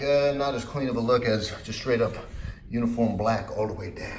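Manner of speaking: normal talking voice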